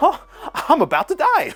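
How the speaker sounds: put-on carefree, cheery sing-song, very high. Mocking a game's voice acting, the speaker imitates a fleeing character's joyful delivery. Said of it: "he's like all joyful".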